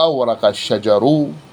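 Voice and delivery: ordinary talk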